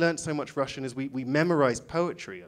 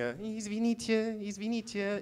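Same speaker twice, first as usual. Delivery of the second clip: put-on hesitant, timid, nervous voice, pitched up; 7 semitones higher, 6 dB quieter than usual. Retelling trying to get someone to bring the bill, mimicking nervous english people. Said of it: "kind of like nervous English people".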